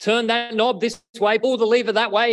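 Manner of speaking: mock shouting, loud and high-pitched. Retelling how a man called instructions down to the men below, retelling a shout. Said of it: "He shouted".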